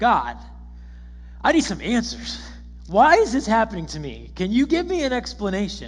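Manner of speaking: loud, swooping, proud and entitled arrogant tone. Acting out how he calls out to god, imitating an arrogant demand. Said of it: "a little bit of pride in his voice. I, I hear him kind of arrogantly saying".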